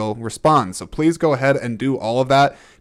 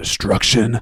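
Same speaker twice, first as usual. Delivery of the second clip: grave, serious tone with weight on "destruction"; 3 semitones lower than usual. Reading a plot summary aloud, 'destruction' said seriously. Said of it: "I tried to say destruction very seriously just now".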